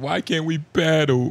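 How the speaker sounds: imitated pleading voice. Retelling how someone else pleaded: imitating someone pleading.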